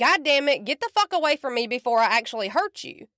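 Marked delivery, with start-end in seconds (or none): none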